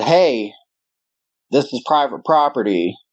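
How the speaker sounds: ordinary talk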